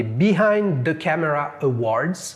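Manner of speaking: very slow, drawn-out put-on American English accent. Reading out a quiz answer option to friends, in an American accent. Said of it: "avec l'accent américain".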